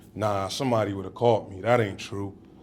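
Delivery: normal talking voice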